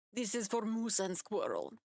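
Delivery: put-on Russian accent with swooping sing-song pitch swings. During a group game, a player voices a character in a Russian accent. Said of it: "It is the only accent I know".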